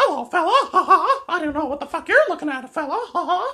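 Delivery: shrill, loud, squeaky cartoon voice, swooping. Asked for a good voice to do, the speaker goes for a Mickey Mouse voice. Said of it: "What about Mickey Mouse".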